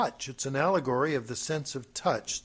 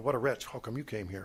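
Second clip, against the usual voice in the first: put-on muttered aside, lower and quieter; 3 semitones lower, 6 dB quieter than usual. Imitating Mister Subliminal from Saturday Night Live: muttering under breath as Mister Subliminal. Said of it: "under his breath, but still so that you could hear".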